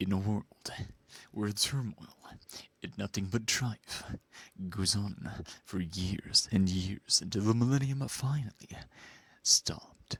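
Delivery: low, slow, epic movie-trailer announcer voice. A streamer recalls a viewer's request and does the announcer voice. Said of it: "I brought out the announcer voice".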